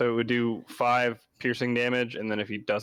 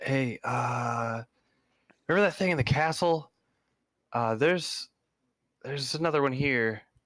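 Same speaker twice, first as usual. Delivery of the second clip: whispered, higher; 4 semitones higher than usual. Warning a companion named Jerk about a hidden creature: whispering to a companion. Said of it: "whisper to Jerk".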